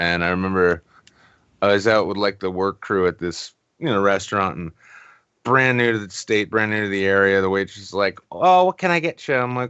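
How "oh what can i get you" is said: silly put-on Minnesota accent, pitched up. Retelling a waitress taking the order at a restaurant, stupid Minnesota accent. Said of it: "slipping into some stupid like M- Minnesota shit".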